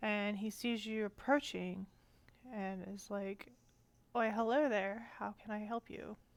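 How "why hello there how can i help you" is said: put-on wise elderly old man voice. Voicing the old leader as he greets approaching visitors, wise old man voice. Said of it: "He's an old man and looks relatively wise".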